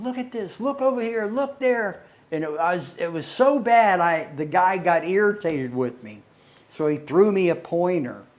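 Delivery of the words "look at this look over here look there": acted, pitched-up yelling, calling out loudly. Retelling calling out to everybody while lying down: imitating own past yelling. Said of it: "I was yelling to everybody".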